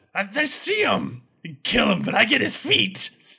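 high, swooping, giddy gnome voice bubbling with glee. Game master voicing a gnome who spots the party, in a gleeful gnome voice. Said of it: "my gnome voice".

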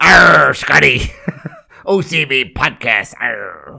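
rough, creaky pirate voice full of arrs. Suggesting a pirate episode for the OCB podcast, pirate voice. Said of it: "should have a pirate episode".

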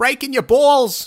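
very loud, very high shout. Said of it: "That's what he sounds like".

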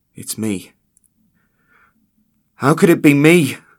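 very loud, high, fear-heavy outburst. A bearded man speaks up among his coworkers, voice heavy with fear. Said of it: "voice heavy with fear".

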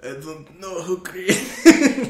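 booming, high-pitched, loud belted character voice. Attempting an impression that comes out as Brando voice. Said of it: "That was Brando".

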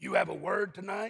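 put-on gravelly voice. Speaker retells the pastor bending over to ask during worship, in Pastor Rod's gravelly voice. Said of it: "his grovelly voice said".

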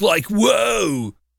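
high, creaky surfer drawl, "whoa" stretched out. Describing how a man in a movie talks, in a surfer dude voice. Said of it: "He talks like this".

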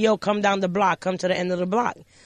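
normal talking voice

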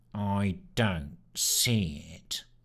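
dull, low, very slow, drawn-out rat-like sneer. Sneer replies when Simone offers to show her boat, sneering rat-like voice. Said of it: "sneered Sneer in his rat like voice".

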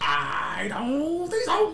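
wacky put-on cartoon voice, very high and very slow. Retelling what a kid said, doing it in a crazy voice. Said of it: "I'm just making a crazy voice".

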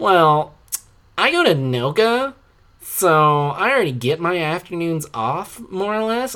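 put-on high, slow girl's voice. Retelling a conversation with a girl at school: imitating a girl. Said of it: "impression of her, and this is literally what she sounded like".

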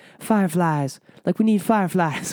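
high-pitched pop-star voice, insistent. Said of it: "sorry about my [name] impression".

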